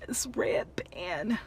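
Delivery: high-pitched voice choked through tears.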